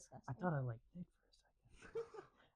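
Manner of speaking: very soft, barely voiced whisper. Adding a quiet aside during a group chat about red flags: whispering. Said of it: "He whispered that".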